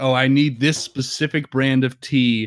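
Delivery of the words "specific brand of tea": ordinary talk, nothing marked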